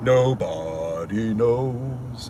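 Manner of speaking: deep voice, pitch dropped way down. Quoting the princess in Spaceballs saying a line: deep low voice. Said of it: "and that deep voice".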